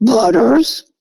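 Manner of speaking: acted, restrained, contained delivery. Retelling hearing someone call the cat while feeding it on the porch, imitating a loud, deep call. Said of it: "really loud, really deep voice".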